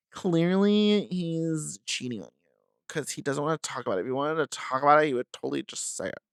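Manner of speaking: put-on annoying, irritating valley girl voice. Imitating what annoying people online would say: impersonating an annoying person. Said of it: "That's my impersonation of, like, anybody that's annoying".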